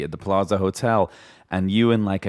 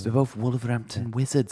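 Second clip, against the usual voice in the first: accent that sounds Welsh; 4 semitones higher, 4 dB quieter than usual. Speakers trying out accents on each other, accent that sounds Welsh. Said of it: "that sounds like a Welshman there".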